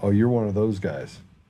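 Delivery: ordinary talk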